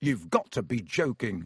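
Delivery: plain reading voice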